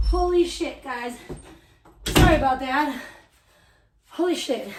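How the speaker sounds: out of breath, winded. Returning after chasing the garbage truck down the street, out of breath. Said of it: "I'm fucking winded".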